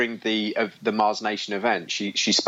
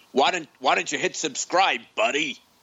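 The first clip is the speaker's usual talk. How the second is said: put-on New York accent voice; 5 semitones higher than usual. Asking listeners to hit subscribe, in a put-on new york accent. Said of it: "that's my New York accent".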